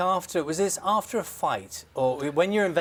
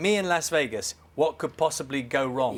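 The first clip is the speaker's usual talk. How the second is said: ordinary delivery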